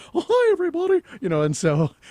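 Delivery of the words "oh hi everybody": very high, squeaky cartoon voice. Recalling his first hour on the air reading a card, Mickey Mouse voice. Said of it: "I sounded probably like Mickey Mouse".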